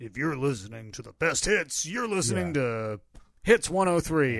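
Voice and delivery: big radio announcer voice. Describing a country station promo, imitating a big-voiced radio announcer. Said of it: "You hear big voice guy say".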